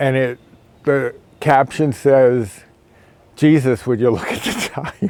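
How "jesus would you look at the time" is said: laughing while talking, higher pitch. Reading out a funny clock caption, laughing while talking. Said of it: "I can't even say it without laughing".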